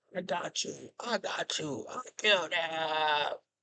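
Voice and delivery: high, soft, slow gloating villain voice.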